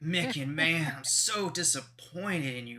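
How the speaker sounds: put-on California surfer dude, beach bro accent. Voicing Fred scolding Micken: California surfer dude accent. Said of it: "Fred has the California surfer dude accent".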